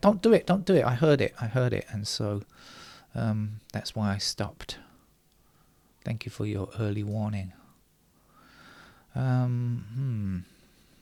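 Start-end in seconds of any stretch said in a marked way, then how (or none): 0.0-0.8 high, loud, urgent, panicked pleading tone.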